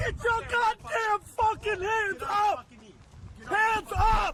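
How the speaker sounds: crying while screaming. A character pretending to be a cop shouts at a homeless man, crying while screaming. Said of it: "sound like he's crying while screaming".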